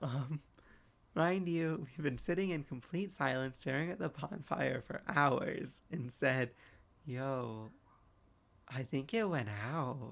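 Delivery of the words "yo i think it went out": put-on, slow, drawn-out, fried brain-mush drawl. Retelling what a friend said around the fire: imitating a stoned drawl. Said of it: "in the most cooked tone, like, drawn out, brain mush kind of tone".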